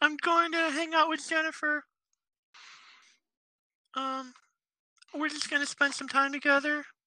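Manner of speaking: put-on very high-pitched little-kid voice. Acting out the victim's words to his killer, in a generic kid voice. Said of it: "I use this every kid's voice".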